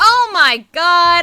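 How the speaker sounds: shouting. Speaker breaks off mid-plan, reacting suddenly: yelling. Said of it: "I'm sorry to yell".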